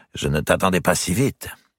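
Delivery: plain reading voice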